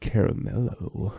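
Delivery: long, slow, stretched-out commercial voice. Recalling an old eighties commercial at the mic: stretched-out Caramello commercial voice. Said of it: "you're doing that caramel voice too ... Stretch it out, out, out".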